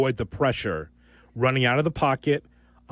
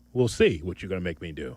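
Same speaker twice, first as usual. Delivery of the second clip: put-on, laid-on tough-guy voice; 7 semitones lower, 4 dB quieter than usual. Answering a co-host who says he will make him pick: put-on tough voice. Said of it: "As I said, a tough voice".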